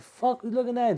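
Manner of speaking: aggressive, confrontational, high-pitched delivery.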